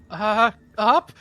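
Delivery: rising intonation. Asked whether they're going sideways or up, answering with rising question intonation. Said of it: "sound like you added a question mark".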